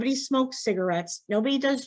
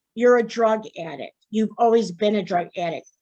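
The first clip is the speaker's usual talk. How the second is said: normal talking voice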